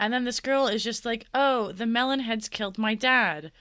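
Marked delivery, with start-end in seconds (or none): 1.3-3.4 put-on casual, unbothered, blasé, offhand throwaway delivery. Retelling a girl's line from a film: imitating a blasé tone. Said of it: "Really blasé about it".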